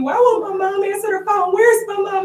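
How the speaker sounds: mock high, loud, hard yelling. Retelling how the goddaughter yelled back on the phone: imitating someone yelling. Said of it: "she's yelling back at me".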